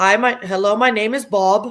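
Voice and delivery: laughably bad, terrible put-on Indian accent. Retelling a guy from Queens who does his worst Indian accent. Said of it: "he does the worst Indian accent".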